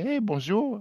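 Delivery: put-on learner's French accent. Speaker retells meeting Eva Longoria in a kitchen as she greets him; Eva Longoria's accented French. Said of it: "avec un accent français, qui essaye de parler français".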